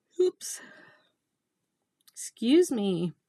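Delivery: spoken through a yawn. Speaker excuses themself mid-talk, yawning. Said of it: "I'm yawning".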